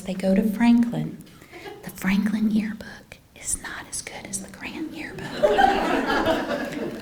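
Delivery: joking, confiding, playful stage whisper. Thanking the yearbook team, confiding where the speaker's children go: playful stage whisper. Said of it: "I have to whisper this".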